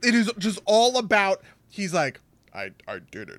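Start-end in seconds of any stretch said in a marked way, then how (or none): 2.5-3.4 very deep, very soft, hushed voice. Gushing about a serious movie scene, quoting his confession in a super deep voice. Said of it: "with that super deep voice".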